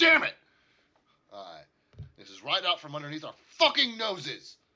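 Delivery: very loud, furious, swooping angry bellow, dwarf voice. Game master voices a dwarf slamming his fist against a crate: angry dwarf shouting. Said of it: "he's mad. He's angry".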